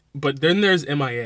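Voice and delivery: ordinary talk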